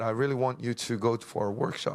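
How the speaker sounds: ordinary delivery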